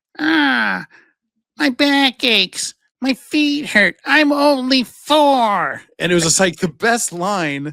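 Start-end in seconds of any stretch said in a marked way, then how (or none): 0.2-5.9 very high-pitched, very slow, drawn-out cartoon voice. Quoting a favorite cartoon scene where the mom complains: Marge Simpson voice. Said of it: "Marge Simpson's voice goes".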